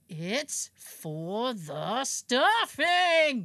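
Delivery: very slow, annoyed, stretched-out drawn-out words. Retelling how he yells at the speaker, imitating annoyed drawn-out words. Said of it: "stretches out the words when he's annoyed".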